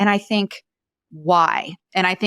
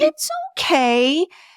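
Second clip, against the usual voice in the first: put-on very high little baby-talk voice; 11 semitones higher than usual. Speaker showing how to soothe an upset dog, little baby voice. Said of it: "even in the little baby voice".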